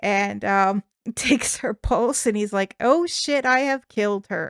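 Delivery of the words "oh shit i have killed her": put-on panicked man voice. Retelling a story, acting out what a man said after killing someone: acting out a panicked man. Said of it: "he panics like anyone".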